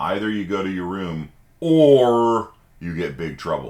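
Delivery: "or" stressed, hit hard. Explaining either-or sentences in spoken English, with stress on or. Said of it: "in spoken English we stress the or".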